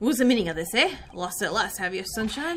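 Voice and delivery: British police inspector voice. Streamer voicing a game's Scotland Yard inspector; Scotland Yard inspector voice. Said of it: "Because Inspector [name] is a Scotland Yard detective. / and do it on the QT, strictly hush-hush".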